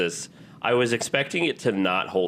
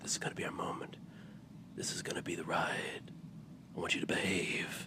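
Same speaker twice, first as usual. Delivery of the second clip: very quiet, breathy, coaxing whisper; 4 semitones lower, 16 dB quieter than usual. Describing a film scene where Nicolas Cage talks to a car, whispery voice. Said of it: "in a whispery voice".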